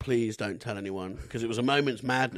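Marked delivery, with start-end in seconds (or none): 0.0-1.2 put-on tearful crying voice, lower. Retelling a teacher chasing after them in tears, imitating a tearful plea. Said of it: "legged after me in tears".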